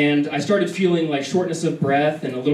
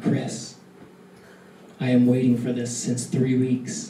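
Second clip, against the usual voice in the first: soft, hushed stage half-whisper; 3 semitones lower than usual. Speaker acts out what she half-whispered in his ear, retelling a half-whisper. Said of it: "she whispers in my ear".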